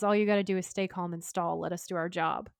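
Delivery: plain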